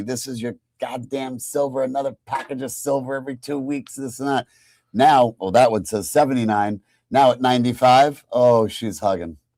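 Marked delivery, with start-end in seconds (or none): 0.0-4.5 play-acted nagging, berating, scolding rant with screaming. Retelling the wife's complaints about silver packages: imitating wife screaming. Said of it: "my wife kept screaming at me".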